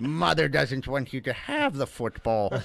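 spooky, creepy ghoulish horror-host voice. Acting out a man who won't return a football, in a Crypt Keeper-like voice. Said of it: "you sound like the Crypt Keeper".

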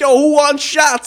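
very high, very loud cartoonish DJ shout. Retelling what the dj at dinner shouted: imitating the dj like a cartoon character. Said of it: "like, a cartoon character".

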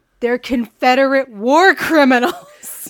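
shouting. Recounting the speaker's answer to someone's complaint, retelling a yell. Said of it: "And I just yelled".

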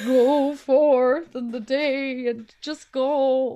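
loud, very slow, huge booming delivery. Picturing the lizard from the Rugrats movie giving advice: imitating the lizard from the Rugrats movie. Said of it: "the big lizard, and he's like".

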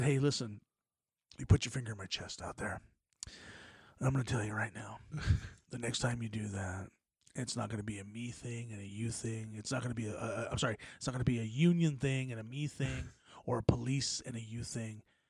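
very low, hushed, put-on menacing voice. Retelling his own warning to a man who put a finger in his chest, retelling a menacing threat. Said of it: "You sound like Suge Knight".

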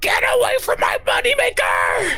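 excited yelling. Goob Gob leaps off the wall with a dagger, striking down; Goob Gob, thrilled yell. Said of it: "kind of thrills as he jumps off the wall".

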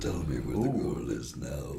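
very low, deep cartoon villain voice. Questioning someone about where the girl is, deep Doctor Claw voice. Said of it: "Like Claw from Inspector Gadget".

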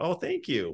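modest voice. Retelling how Dale answered a compliment on his scene: imitating Dale's humble reply. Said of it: "Dale just very humbly went".

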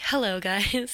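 put-on serious voice. Showing how they greet viewers on stream: imitating own serious streaming voice. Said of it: "So serious".

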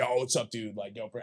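chummy, put-on bro-style dude voice. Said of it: "that's why I put it on the voice".

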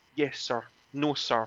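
put-on flustered voice at a flustered pace. Telling a story about a receptionist taking repeated calls, imitating a flustered receptionist. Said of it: "getting a little bit flustered".

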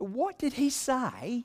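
very high, fake put-on British accent. Retelling what a woman at the very back asked, in a put-on British accent. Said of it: "I have to say it with a British accent".

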